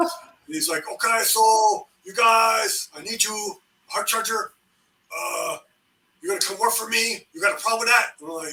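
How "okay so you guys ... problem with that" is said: put-on Korean American accent, laid on thick. Retelling how the first sergeant came in and recruited you, in First Sergeant Chin's thick Korean American accent. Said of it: "he got a really thick Korean American accent".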